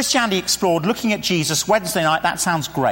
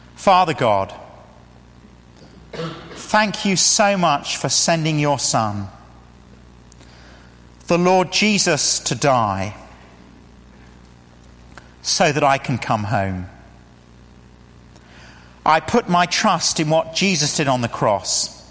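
slow, unhurried, one phrase at a time; 2 semitones lower than usual. Leading listeners through a prayer to come home, slow, phrase by phrase. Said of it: "I'll say it slowly now".

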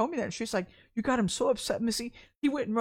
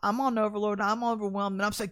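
ordinary talk, nothing marked

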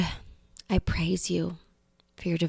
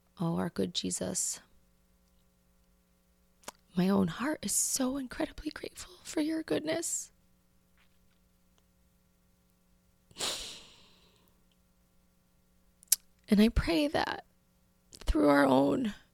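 tearful praying, crying, higher and quieter; 7 semitones higher, 6 dB quieter than usual. Finishing a spoken prayer before signing off: tearful, emotional praying. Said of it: "I apologize for the tears".

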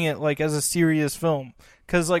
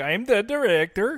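put-on Danish accent on English; 4 semitones higher than usual. Imitating a european film director he calls danish: put-on danish accent. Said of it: "Danish, so it'd be like".

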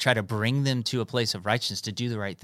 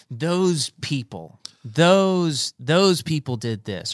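acted, slow, heated anger, raised and drawn-out; 6 semitones higher, 7 dB louder than usual. Voicing what angry online posts sound like: imitating an angry post writer. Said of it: "it's the anger of man".

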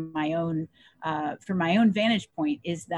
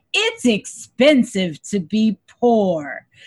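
put-on very drawn-out, slow, swooping Cajun accent; 3 semitones higher, 8 dB louder than usual. Quoting a favorite saying of the speaker's late grandmother, in her Cajun accent. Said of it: "she would say in her Cajun accent".

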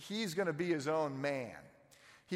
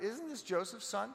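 play-acted, confused, pitched-up voice; 5 semitones higher, 4 dB quieter than usual. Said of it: "a little bit of the confusion in their voice".

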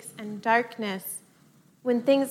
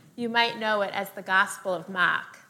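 attempted, put-on New England accent; 3 semitones lower than usual. Introducing this year's gospel at church, the speaker attempts a New England accent. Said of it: "the last time I'll attempt to do that accent".

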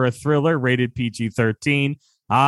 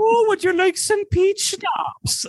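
put-on old Scottish nanny voice, higher. Acting out a Mrs. Doubtfire scene at the door: Mrs. Doubtfire voice. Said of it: "Missus Doubtfire in the world of world".

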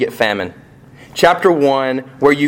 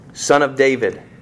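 ordinary talk

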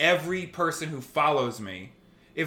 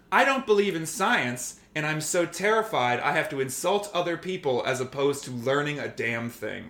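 usual speaking voice

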